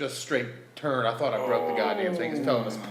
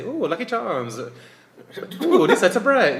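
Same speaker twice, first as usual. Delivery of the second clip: very loud, drawn-out leprechaun voice; 8 semitones higher, 9 dB louder than usual. Showing how they could do it with a Lucky Charms voice. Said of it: "when I do Lucky Charms".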